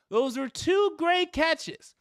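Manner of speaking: yelled out, very high-pitched, loud. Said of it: "I'm yelling".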